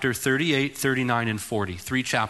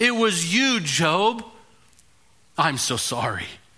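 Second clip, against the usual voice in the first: put-on sarcastic roaring voice, higher; 4 semitones higher than usual. Retelling God roaring down at Job: imitating God's sarcastic roar. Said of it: "And he roars down".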